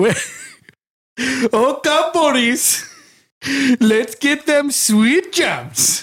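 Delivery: very high, slow blend of Indian and Jamaican accents. Doing an impression of King Julian from Madagascar: King Julian impression. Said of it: "I can do a pretty good one".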